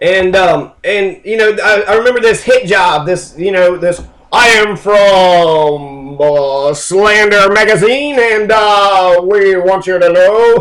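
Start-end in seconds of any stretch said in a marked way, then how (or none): 4.3-10.6 arrogant, snooty reporter voice, spoken very slowly. Recalling a magazine's hit job, stuck-up arrogant reporter voice. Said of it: "stuck up, sort of arrogant voice".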